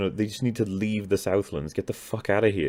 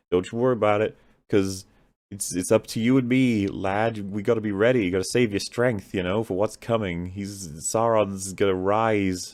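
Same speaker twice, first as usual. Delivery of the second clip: ordinary talk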